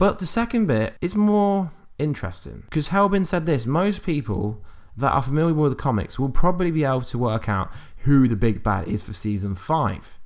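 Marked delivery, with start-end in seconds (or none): none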